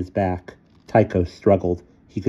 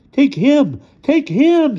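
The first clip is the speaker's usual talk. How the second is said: very high, loud, terrified squeal; 6 dB louder than usual. Pointing at a companion as a growling creature threatens them, terrified squeal. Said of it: "squealed Leonardo, terrified".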